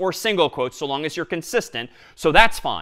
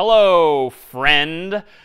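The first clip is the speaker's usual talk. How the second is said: put-on sarcasm, louder; 6 dB louder than usual. Showing an example greeting to print in code: mock sarcastic tone. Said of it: "maybe I'm being a little sarcastic here".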